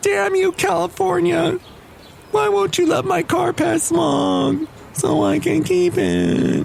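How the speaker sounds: put-on sad voice pitched very high. Telling sad stories about the speaker's car, in a put-on sad voice. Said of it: "your sad voice".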